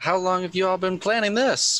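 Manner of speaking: very high, sweet, wholesome grandma voice. A player's character asks the group how long they have been planning this, wholesome grandma voice. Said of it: "In a wholesome grandma voice".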